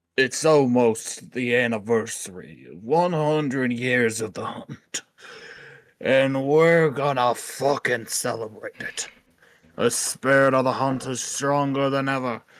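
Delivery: jerky, obnoxious, unpleasant character voice. Asked by the co-host to voice a group from the journal: asshole voice. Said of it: "Will you give them an asshole voice?".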